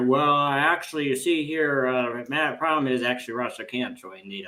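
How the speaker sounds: drawn-out Southern drawl, a bit embarrassed. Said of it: "came back kind of embarrassed later".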